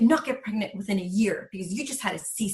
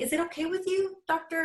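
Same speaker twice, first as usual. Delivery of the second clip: tentative, unsure, high, rising questioning intonation; 8 semitones higher than usual. Recalling asking a doctor, the speaker retells their own tentative question. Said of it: "coming out tentative and almost like a question".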